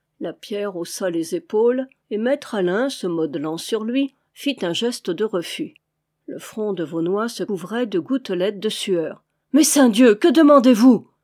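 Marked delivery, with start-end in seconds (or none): 9.5-11.0 distressed cry, very loud. Vaunois, refused again, demands what they want, crying out in distress. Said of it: "s'écria-t-il d'un ton de détresse".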